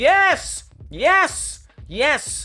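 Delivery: excited shouting. Finally getting the node to work after a struggle, yelling excitedly. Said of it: "Sorry for yelling".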